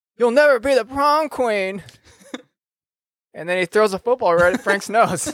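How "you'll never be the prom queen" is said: high-pitched yelling. During his attack in the game, a character yells at Frank, yelling. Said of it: "He's yelling at Frank".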